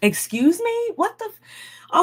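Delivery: outraged disbelief.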